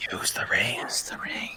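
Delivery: hushed, whispering voice. Urging a player again and again to use the ring: whispering. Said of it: "continually whispers in my ear".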